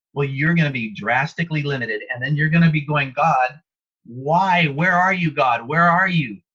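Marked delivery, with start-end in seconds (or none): 3.2-6.3 slow, drawn-out, distressed crying out. Speaker acts out what a limited person will say to God, imitating someone crying out. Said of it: "I've been crying out for you".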